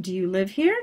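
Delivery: pitch climbs up at the end on here. Demonstrating a yes-no question, rising at the end. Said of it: "yes, no questions, it goes up".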